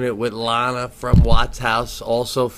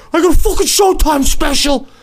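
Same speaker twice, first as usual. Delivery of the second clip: very loud, high-pitched, shrill shouting; 8 dB louder than usual. Recounting balancing on a ladder after the show ended, retelling a yell. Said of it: "I'm yelling".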